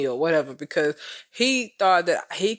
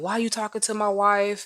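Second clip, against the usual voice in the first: upset, distressed voice, pitched higher; 6 semitones higher than usual. Retelling a phone call, imitating someone upset. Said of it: "and he was upset".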